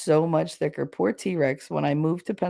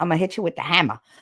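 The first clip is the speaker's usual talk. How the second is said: put-on Louisiana accent. Imitating movie actors from louisiana to show how they talk: louisiana accent. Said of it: "the actor is actually from Louisiana and they're just like".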